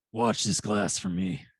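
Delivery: low, rough, gravel-edged voice. A player in a tabletop game speaks in character, in a soft, gravelly voice. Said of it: "softly and like gr- gravelly".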